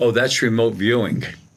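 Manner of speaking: normal talking voice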